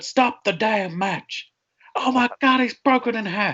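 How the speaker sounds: high, slow, drawn-out call. Quoting famous wrestling commentator lines to another speaker: Jim Ross impression. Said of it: "Jim Ross. You never heard".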